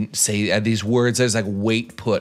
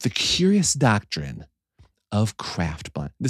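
clear, eloquent podcaster voice, slower. Announcing a working title, in a full-on podcaster voice. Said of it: "I got my full-on podcaster voice happening right now".

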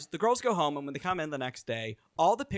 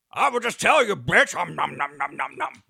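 growling monster voice with munching noises; 6 dB louder than usual. Impersonating Kandy Muse while telling what happened last week, in a Cookie Monster voice. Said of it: "It's also my Cookie Monster".

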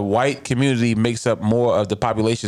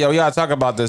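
ordinary talk, nothing marked

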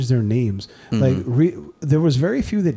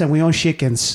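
mock Latin American movie accent.

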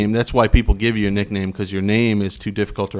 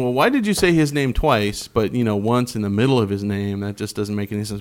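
ordinary delivery

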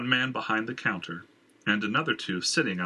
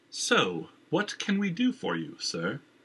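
polite, pitched-up, carefully enunciated, every syllable clear; 5 semitones higher than usual. A man speaking to Jenner as they enter the building: well-mannered, each syllable enunciated. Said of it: "his voice well-mannered, each syllable enunciated".

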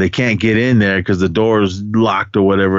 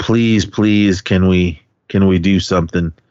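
acted, mock begging and pleading tone. Retelling how a woman begged the others to do something, mock-begging. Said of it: "Renee is like just begging".

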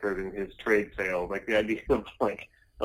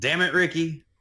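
put-on East Coast trailer-park accent, pitched up; 8 semitones higher, 4 dB louder than usual. Quoting how someone sounds when drunk: Trailer Park Boys impression. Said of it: "sounds just like a Trailer Park Boy".

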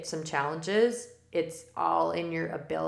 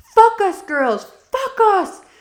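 put-on French accent, higher and louder; 14 dB louder than usual. Recalling practice, the speaker copies LaRouche yelling at the girls, imitating LaRouche's French accent. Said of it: "So with her accent".

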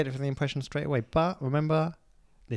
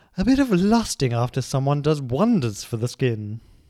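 slow, loud, deliberate, fully emphasized delivery; 6 dB louder than usual. Doing an impression for another speaker to guess: Elizabeth Hurley impression. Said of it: "it's Hurley".

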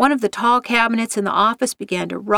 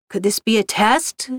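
ordinary delivery, nothing marked

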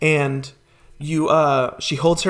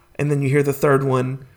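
plain

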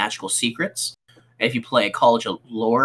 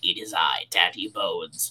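low, creepy undead necromancer voice; 6 semitones lower, 6 dB quieter than usual. Joking with fellow players about their characters turning bard: creepy necromancer impersonation. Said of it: "That's my impersonation of necromancer".

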